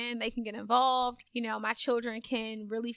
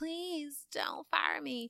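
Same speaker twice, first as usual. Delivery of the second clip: mock very slow, drawn-out, high, swooping pleading; 5 semitones higher, 5 dB quieter than usual. Retelling begging on knees not to be fired: imitating own begging plea. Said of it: "and I begged her".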